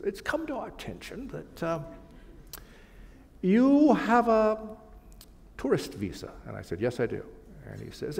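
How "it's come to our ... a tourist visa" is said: put-on strong British accent, much higher, slower. Retelling a phone call from an immigration official, very British accent. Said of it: "with a very British accent said".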